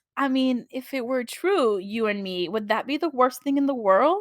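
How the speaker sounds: hushed, low whisper. Quoting a man's line to a woman, in a low whisper. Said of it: "low he whispers and everything".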